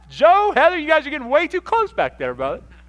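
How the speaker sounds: booming, shrill, high-pitched, loud, playful teasing. Speaker calls out Joe and Heather at the back, teasing them. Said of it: "I'm teasing you".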